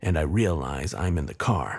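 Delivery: ordinary delivery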